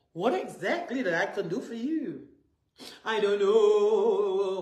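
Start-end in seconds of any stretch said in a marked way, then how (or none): 3.0-4.6 mock tearful sobbing, with "know" drawn out. Retelling a woman's answer when he asked what to do, imitating someone crying.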